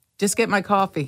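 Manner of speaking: ordinary delivery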